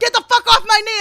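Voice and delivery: screaming in anger, very high and loud. Retelling yelling at a dog hanging on your knee: retelling a yell at the dog. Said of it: "I'm yelling at the dog".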